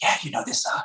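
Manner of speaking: hushed, secretive, conspiratorial whisper. Retelling how a neighbor talked about covid: imitating someone whispering. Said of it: "whispering to me".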